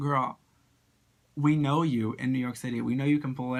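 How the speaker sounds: ordinary delivery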